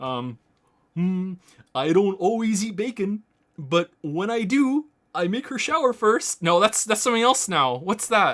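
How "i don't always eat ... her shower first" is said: high, reaching, half-remembered cartoon puppet voice. Speaker retells a joke they used to do for her, attempting Kermit the Frog voice. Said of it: "that joke in Kermit the Frog voice".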